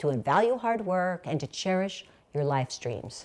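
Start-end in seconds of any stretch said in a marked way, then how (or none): none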